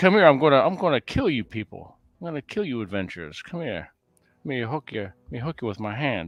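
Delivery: swooping, blustery cartoon rooster voice. Retelling playing a dungeon monster to adventurers, in a Foghorn Leghorn voice. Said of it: "I just picture him with that voice".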